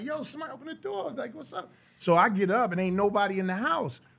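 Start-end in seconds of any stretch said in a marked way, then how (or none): 0.0-1.7 put-on very high, carrying, screaming yell. Retelling calling through the house for someone to open the door: retelling own screaming. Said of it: "I'm screaming through the house".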